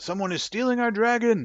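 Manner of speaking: goblin yelling voice. Narrating a game, voicing a goblin rushing through the hallway; goblin shouting. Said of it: "rushes through and shouts".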